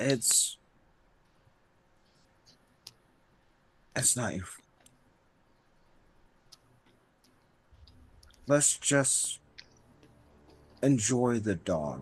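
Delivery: whispering voice. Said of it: "I say in a whisper".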